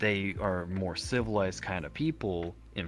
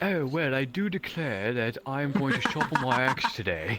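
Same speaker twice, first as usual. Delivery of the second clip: raised pitch, slow, intellectual-sounding; 5 semitones higher, 4 dB louder than usual. Imagining the character Dars after arcane intellect: Dars voice after arcane intellect. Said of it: "someone casts arcane intellect on Dars and it's just like".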